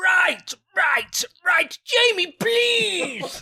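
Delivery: high, shouted, overacted put-on voice.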